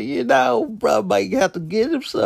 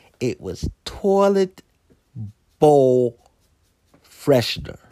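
slow, low, halting, deliberately spaced word by word; 6 semitones lower than usual. Repeating a point for listeners, slowed down deliberately. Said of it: "Let me slow it down a little bit".

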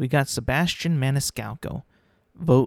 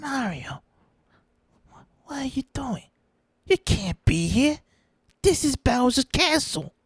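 very high, squeaky, badly done put-on voice; 12 semitones higher than usual. Imagining a Spike voiced by Sebastian Maniscalco: Sebastian Maniscalco impression. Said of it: "that's a pretty poor impression of Sebastian Maniscalco".

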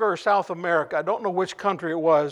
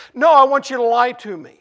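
mock, raised, heavily sarcastic tone; 4 semitones higher, 6 dB louder than usual. Quoting a TV judge's retort to someone asking to be honest, sarcastic. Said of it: "She'll say sarcastically".

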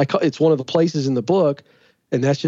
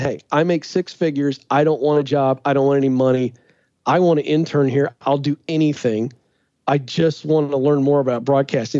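plain

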